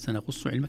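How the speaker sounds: normal talking voice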